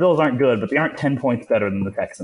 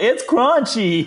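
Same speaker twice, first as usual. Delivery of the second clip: put-on shrill, very high, childish yell; 11 semitones higher than usual. Retelling a first bite of crunchy peanut butter at a friend's house: imitating own childhood yell. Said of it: "and just yelled".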